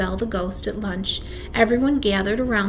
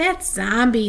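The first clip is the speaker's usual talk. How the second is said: ordinary delivery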